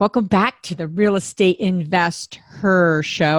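very slow, stretched-out, drawn-out delivery. Podcast host welcoming listeners back to the show, very slow. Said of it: "you like how slow I'm saying that?".

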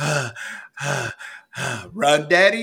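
play-acted heavy huffing and puffing, high, slow. Retelling how a child copies the speaker's workout breathing: imitating fake heavy breathing. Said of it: "she starts copying my heavy, heavy breathing".

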